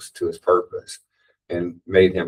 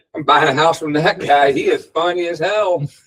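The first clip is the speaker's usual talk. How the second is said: mock impressed voice, pitched up high. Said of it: "they're not laughing going".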